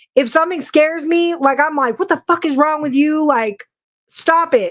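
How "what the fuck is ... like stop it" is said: put-on angry, mad tone. Showing how getting scared makes them react: imitating own angry reaction. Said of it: "I get mad".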